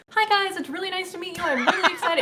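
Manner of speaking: very high, loud, overly eager, excitable voice. Retelling how she used to greet stream viewers: imitating own higher, overly excitable voice. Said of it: "I talk higher".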